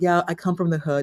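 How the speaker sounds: ordinary talk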